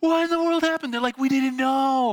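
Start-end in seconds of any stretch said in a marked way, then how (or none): 0.0-0.9 acted-out screaming and yelling outburst, high-pitched. Recounting not being caught and bouncing off the ground, retelling screaming and yelling. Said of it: "I'm like screaming and yelling".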